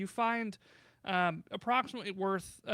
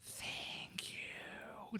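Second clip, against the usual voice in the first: soft, breathy whisper in a little spirit voice. The freed spirit of the worm thanks the party, whispering. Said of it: "It whispers".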